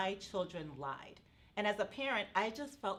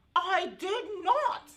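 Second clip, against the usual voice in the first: three-year-old child voice with put-on British accent; 10 semitones higher, 9 dB louder than usual. Retelling her three-year-old grandson's denial, in a british accent. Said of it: "in a with a British accent".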